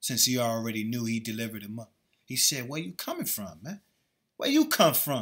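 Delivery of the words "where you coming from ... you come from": put-on sarcastic tone. Retelling Yahweh Shai's words to the one who betrayed him: imitating a sarcastic tone. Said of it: "Yahweh Shai was being sarcastic".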